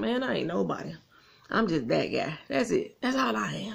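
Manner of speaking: shift into a street slang voice.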